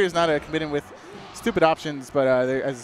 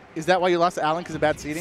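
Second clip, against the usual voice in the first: normal talking voice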